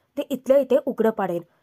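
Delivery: ordinary delivery, nothing marked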